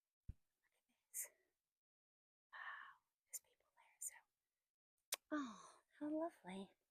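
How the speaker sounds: soft, breathy, hushed whisper. Walking and showing viewers a really quiet place, whispering. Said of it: "I'm whispering because it is really quiet".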